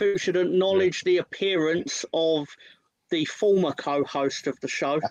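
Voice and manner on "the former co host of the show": former stressed with a rising tune. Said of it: "Emphasis on former".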